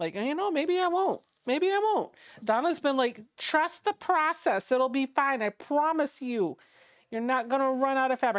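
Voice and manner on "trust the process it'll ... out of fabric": put-on New Jersey accent with mobster flavour. Quoting what Donna keeps telling the speaker, imitating Donna with a New Jersey accent. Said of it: "she sounds like New Jersey in this voice".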